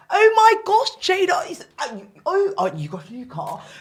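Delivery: put-on posh, high, swooping upper-class drawl. Imitating a well-known barrister neighbour who talks very posh: imitating a posh neighbour. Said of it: "That's how he".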